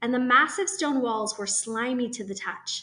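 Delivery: plain reading voice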